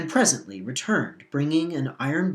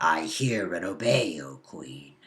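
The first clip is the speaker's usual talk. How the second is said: very low, growling wolf voice; 9 semitones lower, 3 dB quieter than usual. Narrator reading the wolf answering the Queen; growling wolf voice. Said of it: "growled the wolf".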